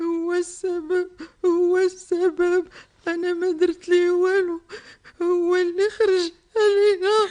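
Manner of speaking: loud, high-pitched sobbing through every word. In a drama, a mother blames him while her child begs her to stop, crying. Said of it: "ما تبكيش".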